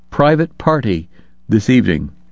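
plain

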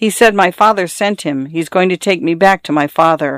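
plain

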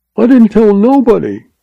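cringing, very high, quavering, trembling voice. Reading a story, an agent answers Norcross's accusation, quavering. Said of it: "quavered the cringing agent".

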